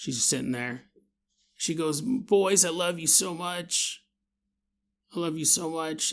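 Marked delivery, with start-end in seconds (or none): 2.0-6.1 weak, sick, frail, ailing voice. Retelling how a sick mother calls her sons close: imitating a sick, frail mom. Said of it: "mom's all, like, sick, frail".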